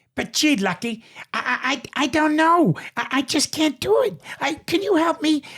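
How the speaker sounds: very high, squeaky cartoon voice. Acting out the Toon detective's lines, in Bonkers D. Bobcat voice. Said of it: "how about Bonkers?".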